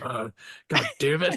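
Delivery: put-on mumbled delivery. Retelling how a movie character says it while walking away: imitating a mumble. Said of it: "He just mumbles like".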